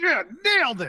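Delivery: yelling. Playing a character practicing a sales pitch: loud in-character shout. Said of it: "says it really loud".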